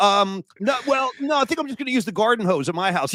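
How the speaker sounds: mock nervous, panicky and hesitant delivery. Retelling his flustered refusal to a friend's mom's shower offer: imitating his own panicked reply. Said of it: "the panic that set in".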